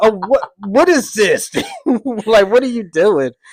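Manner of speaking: shocked, distraught, loud, high outburst of disbelief. Speaker acting out their reaction if the other person weren't loud, acting out being distraught. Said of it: "I would be distraught. I'd be like".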